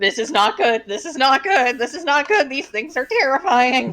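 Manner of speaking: frightened, frantic, panicked bird-like squawking. As a fight starts, a player voices Edgar squawking in panic. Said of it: "or squawking in panic".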